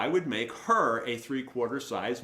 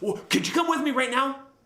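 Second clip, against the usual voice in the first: very high, frantic, raised panicked voice; 13 semitones higher, 6 dB louder than usual. Retelling how a man came in looking for him, imitating a panicked man. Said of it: "he's like in a panic".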